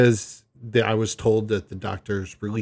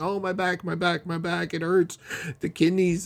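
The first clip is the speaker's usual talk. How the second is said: put-on tears, much higher, slower; 7 semitones higher than usual. Retelling a woman hamming it up for the doctor, imitating someone crying. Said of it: "Now she's in tears saying".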